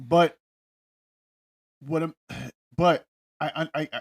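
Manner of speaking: very slow, halting, repeated stuttering stammer. A speaker in a discussion about juries starts to reply, stuttering. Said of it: "let me stop stuttering".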